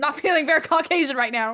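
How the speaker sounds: shouting. Repeating an earlier remark louder to another speaker: yelling. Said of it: "Stop yelling".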